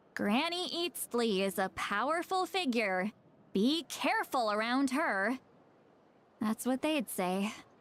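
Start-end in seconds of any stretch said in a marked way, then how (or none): none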